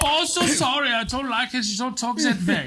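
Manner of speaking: very high-pitched, put-on German accent. Talking with friends about doing accents, the speaker performs a German accent. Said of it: "It goes into his whole body when he does it too".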